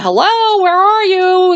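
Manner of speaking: acted, high, long, drawn-out calling yell. Retelling a horror film scene, imitating someone yelling.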